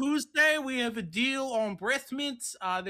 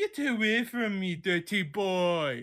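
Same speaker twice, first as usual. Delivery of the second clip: fake Romanian woman's accent; 3 semitones lower than usual. Doing a bit in character toward Alex, in a Romanian woman accent. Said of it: "my Romanian woman accent".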